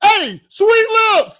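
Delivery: very loud, shrill, high street holler. Showing how it would look to call out on the street: yelling down the street. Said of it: "What I look like yelling down the street?".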